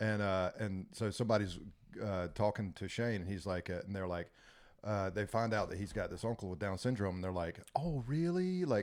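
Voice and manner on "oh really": acted, sorry-sounding, apologetic tone, pitched up. Retelling how someone reacted on learning of the uncle: imitating an apologetic tone. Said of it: "apologetic in their tone".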